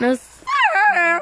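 voice cracking way up high.

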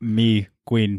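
put-on manly voice. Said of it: "a man voice".

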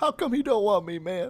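soft, high, sorrowful announcer-style delivery. Guest giving his sad intro right after being introduced: sad voice. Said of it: "that's my sad intro".

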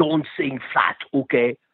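put-on heavy German accent. Retelling the blunt thing he said to you, in a heavy German accent like Arnold Schwarzenegger. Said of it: "a very heavy German accent like Arnold Schwarzenegger".

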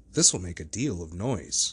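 plain

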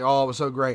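exaggerated sarcastic praise. Retelling own earlier remark about the sequel: imitating own exaggerated sarcastic praise. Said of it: "I'm exaggerating when I say".

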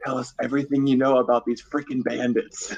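voiced stage half-whisper, leaning close in. Playing a character who pulls a guard close to his ear: half-whispering in character.

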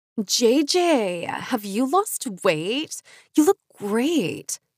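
high, slow, cooing, gushing delivery. A narrator reads Lisa's line to the storyteller, cooed. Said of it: "cooed Lisa".

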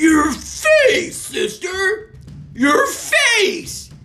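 very high, very slow, drawn-out shrieking cry. Reading a story, one sister crying out to the other, shrieked. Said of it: "Shrieked Murkle".

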